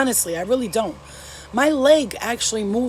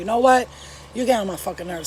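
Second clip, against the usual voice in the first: ordinary talk, nothing marked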